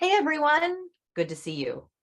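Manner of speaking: very high start, pitch sliding down. How people greet everyone on a video call: starts high, falls down. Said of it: "They start up here and they go down here".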